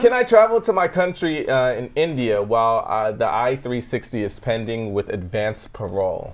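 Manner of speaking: ordinary talk, nothing marked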